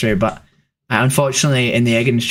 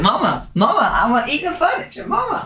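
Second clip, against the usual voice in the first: squeaky, very high-pitched dog voice; 14 semitones higher than usual. Voicing the dog who is eating the furniture: speaking as the dog. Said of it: "He's like".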